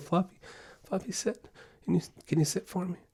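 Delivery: hesitant, meek, high, very hushed pleading tone. Showing how not to tell a dog to sit: unsure, timid dog command. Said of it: "You hear the difference in that confidence?".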